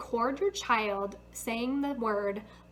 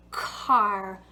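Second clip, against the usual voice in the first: car stressed, a bit louder and raised; 3 semitones lower, 7 dB louder than usual. Modeling the word back for someone who said tar: louder on car. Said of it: "I also emphasized the sound by saying it a little bit louder".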